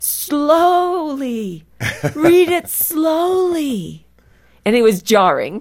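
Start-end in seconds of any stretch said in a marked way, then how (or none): 0.0-4.1 high-pitched, slow, loud calling out. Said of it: "he would yell out".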